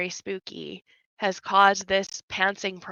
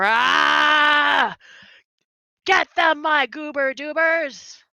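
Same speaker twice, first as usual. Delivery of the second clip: very slow, loud snarling skeleton voice, "rah" drawn out; 7 semitones higher, 6 dB louder than usual. The storyteller voices an animated skeleton calling out its creatures, snarling skeleton voice. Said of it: "he snarls and his mouth gets real big and he goes".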